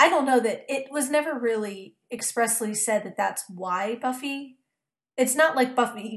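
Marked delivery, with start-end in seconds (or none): 5.2-6.2 voice cracking, breaking on the words. Talking about Buffy and him, the speaker's voice breaks: voice breaking. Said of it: "my voice just broke".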